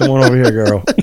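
play-acted flirtatious voice

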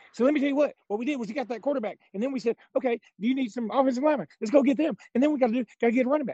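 fast high salesman patter. Mocking a man you heard on the radio, doing Jimbo Fisher as a used car salesman. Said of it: "He sounds like a used car salesman".

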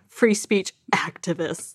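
mocking, sarcastic, scare-quoted tone. Repeating the phrase to show a listener: sarcastic air quotes in voice. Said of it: "the air quotes in my voice".

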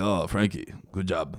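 put-on Greek accent. The speaker retells his dad praising Frankie: imitating dad's Greek accent. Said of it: "with his Greek accent".

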